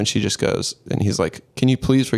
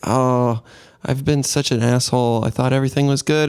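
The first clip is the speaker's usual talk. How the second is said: put-on high-pitched girlish voice; 3 semitones higher than usual. Retelling a film scene where Cassie acts affectionate: imitating Cassie's high-pitched girlish voice. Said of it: "She's kind of talking this high-pitched girlish voice".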